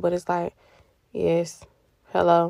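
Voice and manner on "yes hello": dragging, unenthused, reluctant tone, lower. Retelling how one answers the phone to mom, imitating a dragging, unenthused greeting. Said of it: "like a drag".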